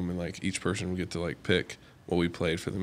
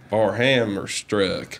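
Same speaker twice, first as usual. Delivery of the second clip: put-on very American accent, louder; 2 semitones higher, 8 dB louder than usual. Quoting a line from Inglourious Basterds: Brad Pitt accent impression. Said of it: "he reminds me of him with, like, his accent".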